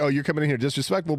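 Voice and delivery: normal talking voice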